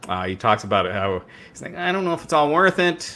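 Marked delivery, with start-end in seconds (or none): 1.7-3.2 whiny, very high-pitched voice. Retelling a wrestler's promo in his words: imitating Rollins whining. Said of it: "just the whiniest wuss you've ever heard".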